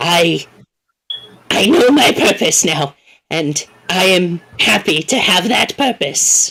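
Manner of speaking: voice welling up with real pain. Voicing a character speaking of their purpose: pained emotional character voice. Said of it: "well up a whole lot of my actual pain".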